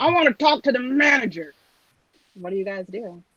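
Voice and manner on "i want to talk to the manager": angry, high, screaming, hollering ogre voice. Voicing an ogre at the bar who screams for the manager: ogre screaming. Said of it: "an ogre at the bar screaming".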